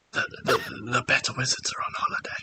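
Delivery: very quiet, hushed, stammering, stumbling whisper. In a role-play, a character whispers his answer to the players; whisper. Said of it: "he whispers to you".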